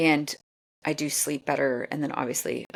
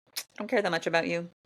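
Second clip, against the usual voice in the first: usual speaking voice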